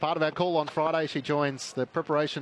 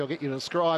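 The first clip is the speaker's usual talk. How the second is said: plain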